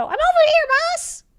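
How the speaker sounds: very high, tiny squeaking voice. Game master voicing a tiny servant calling from the entrance, tiny voice. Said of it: "You hear a tiny voice from back at the entrance go".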